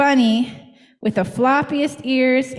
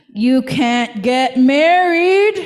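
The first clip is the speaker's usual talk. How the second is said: spooky storybook bug voice, "married" drawn out; 4 dB louder than usual. Reading a story where the stink bug interrupts the wedding, in a scary voice. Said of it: "said a scary voice".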